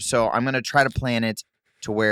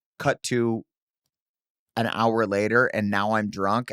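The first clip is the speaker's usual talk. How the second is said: normal talking voice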